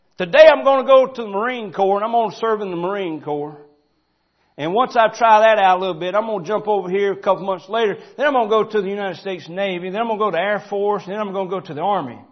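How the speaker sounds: high, loud, proud boasting, belted out.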